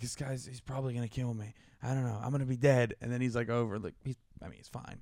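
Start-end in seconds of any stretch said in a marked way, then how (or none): 0.0-2.9 put-on muffled whisper. Retelling a buddy fearing for his life: imitating a friend whispering.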